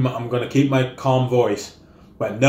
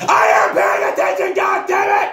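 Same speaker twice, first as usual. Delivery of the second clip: mock, very high, shrill, furious shout; 5 dB louder than usual. Speaker reenacts what they yelled after banging it against the wall: reenacting an angry yell. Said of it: "That's basically how it sounded".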